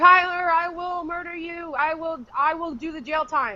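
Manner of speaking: slow, drawn-out threatening tone. Retelling how Crystal yells at her kids: imitating Crystal yelling. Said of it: "where she's yelling, like".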